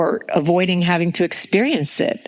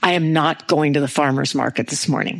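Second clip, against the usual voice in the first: very grouchy, cranky, stubborn, defiant tone; 3 semitones lower than usual. Retelling a morning complaint to Jack: retelling a grouchy, defiant line. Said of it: "in this very, very grouchy, defiant tone".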